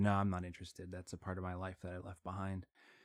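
put-on deadpan voice. Retelling how a man answered a documentary request, imitating his deadpan reply.

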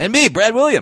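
super high-pitched, dwarfish squeak. A co-host names himself in the podcast intro, super high voice. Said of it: "you went super high with your voice right there".

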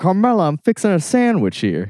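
chewed, swinging high voice. Acting out a Tony scene while another narrates the actions; James Gandolfini impression, mouth full. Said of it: "But with the gabagool in his mouth".

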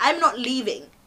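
normal talking voice

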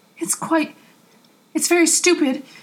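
stuttering. Answering another man's hissed question, a man replies, stuttered. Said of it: "Aziraphale stuttered".

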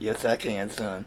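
robot voice spoken while breathing in. Retelling how his mom answered his question to her: inhaled robot voice. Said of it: "can you talk like a robot?".

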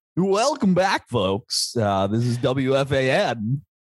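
slow, high on-air announcer. Working on a radio voice to welcome folks back, put-on radio announcer voice. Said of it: "really want to work on my radio voice".

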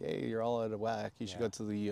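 ordinary delivery

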